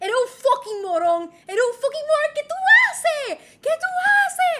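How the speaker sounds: very loud, very high, shrill, rising angry yelling. Acting out past road rage at other drivers: imitating own past road rage yelling. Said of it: "I would slow down my car, and I would be like".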